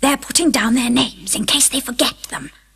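hushed stage half-whisper. Reading a story aloud, the Duchess speaks to Alice during the trial: half-whispered. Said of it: "whispered the Duchess".

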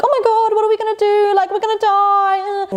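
high, panicked, wailing voice. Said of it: "she's panicking and she's like".

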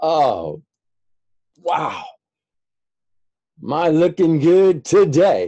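high, loud, ironic gushing voice.

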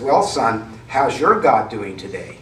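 mock snarky, sarcastic little voice. Retelling how an atheist mother calls her son after tragedy, in a mock-snarky little voice. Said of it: "in a snarky little voice says".

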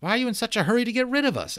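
very high-pitched, suspicious tone. Narrator reads Gillian being pushed out of the room, suspicious. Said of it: "asked Gillian suspiciously".

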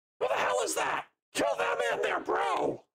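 very high-pitched, raspy, rough little imp yell. Calling for initiative, the speaker voices an imp as it shouts: shouting imp voice. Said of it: "you hear the imp shout".

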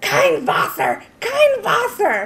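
acted, shrill, swooping screaming in German. Retelling how the restroom attendant caught them taking water: imitating screaming in German. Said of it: "started screaming at us in German".

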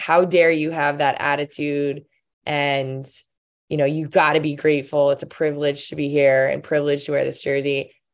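plain

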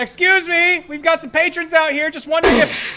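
shouting from outside a door. Calling into a building from outside the door: shouting from outside a door. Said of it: "I'm going to shout from outside the door".

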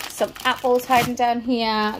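ordinary delivery

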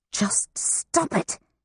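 hushed, whispered hiss. At a dinner table, a woman leans across a man to speak to another woman, hissing. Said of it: "she hissed".

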